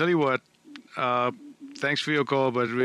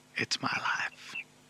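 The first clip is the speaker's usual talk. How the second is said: whispered, much quieter. Chatting with someone on their radio show, whispering. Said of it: "I'm whispering".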